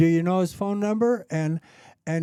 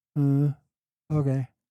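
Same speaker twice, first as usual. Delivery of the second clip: put-on slow cowboy drawl, lower; 4 semitones lower than usual. Retelling a phone call, imitating a cowboy's slow reply: imitating slow cowboy drawl. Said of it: "he's real slow".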